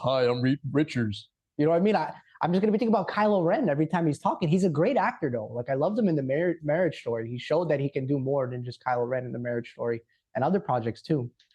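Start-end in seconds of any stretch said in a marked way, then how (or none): 0.0-1.3 deep, slow, deliberate, weighty delivery. Imitating an actor rumored for a role: Adam Driver deep voice. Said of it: "that deep voice".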